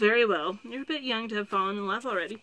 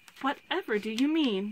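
taken-aback, astonished, surprised disbelief; 2 semitones higher than usual. The lady-in-waiting responds to what was said, astonished. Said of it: "the lady-in-waiting said in astonishment".

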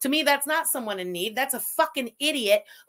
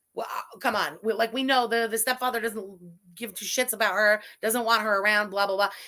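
usual speaking voice

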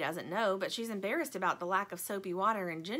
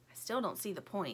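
ordinary delivery, nothing marked

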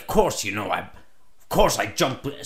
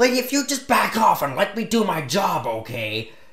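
put-on high, fed-up, exasperated tone; 5 semitones higher than usual. Retelling what they told a nagging lady, retelling an exasperated reply. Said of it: "exasperated reply to nagging lady".

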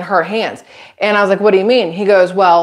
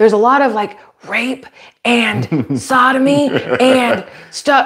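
very slow, drawn-out, full-voiced stage whisper; 4 semitones higher than usual. Retelling how a store clerk lowered his voice about a book: imitating someone half-whispering. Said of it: "he starts to whisper".

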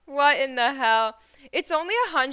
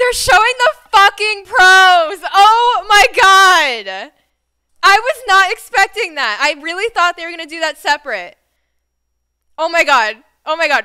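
very loud, pitched-up, overwhelmed, almost tearful excitement; 6 semitones higher, 13 dB louder than usual. Watching a product presentation live, reacting to what is shown: overwhelmed with excitement. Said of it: "I'm so excited".

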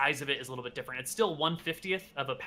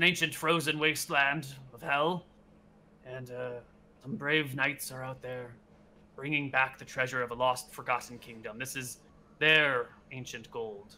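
put-on aged old man voice. Game master voices an elderly sheriff explaining where the gold came from: elderly sheriff voice. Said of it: "The sheriff is an elderly gentleman. He's got to be at least like 85 years old".

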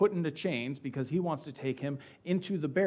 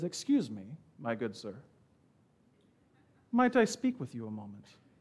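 refined, well-educated gentleman's voice, swooping and polite; 3 semitones lower than usual. Retelling a prisoner suddenly addressing a roman commander: speaking like a well-educated man. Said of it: "in very, very eloquent Greek, he's just speaking like a well-educated man".

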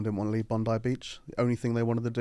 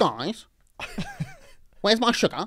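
put-on voice, very high and swooping; 12 semitones higher, 4 dB louder than usual. Telling a story and doing an impression: Emily impression. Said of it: "this is my impression of Emily".

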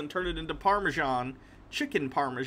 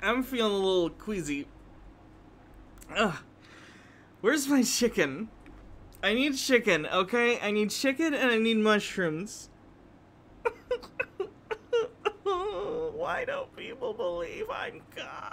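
put-on drunk goddess voice, higher; 7 semitones higher than usual. After a listener praises it, the host does the drunk mother god voice. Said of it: "Hannah's drunk mother god voice".

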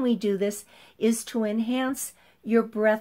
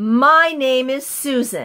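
very loud, supported, projected, not harsh, no yelling; 3 semitones higher, 8 dB louder than usual. Instructor demonstrating a voice exercise to a group, loud but not harsh. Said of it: "The objective is to be loud".

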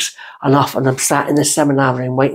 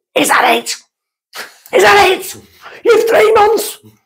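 very high-pitched screaming at full volume; 3 dB louder than usual. Retelling screaming at the dog that walked in: retelling a scream. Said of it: "I screamed at him".

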